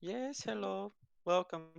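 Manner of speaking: put-on high, soft little-old-lady character voice. Storyteller voices a little old lady stumbling outside, little old lady voice. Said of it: "stumbling outside is a little old lady".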